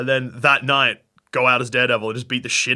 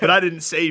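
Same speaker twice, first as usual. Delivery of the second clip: ordinary delivery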